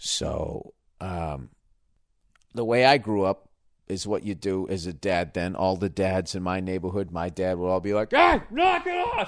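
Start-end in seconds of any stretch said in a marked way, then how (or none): 8.1-9.3 very high-pitched, loud hollering. Describing how dads in the neighborhood scolded kids, imitating a dad yelling. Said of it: "Start fucking yelling at a baby".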